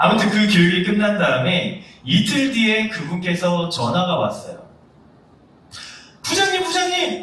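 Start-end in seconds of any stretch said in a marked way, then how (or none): 6.2-7.2 mock-excited, put-on voice, much higher pitch. Recounting a phone call two days after the training; imitating an excited caller. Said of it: "굉장히 흥분한 목소리였어요".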